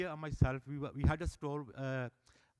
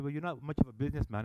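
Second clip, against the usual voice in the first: usual speaking voice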